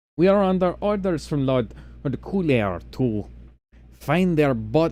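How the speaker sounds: attempted put-on French accent. Playing a character announcing orders from their lord, put-on French accent. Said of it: "allow me to adopt my best French accent".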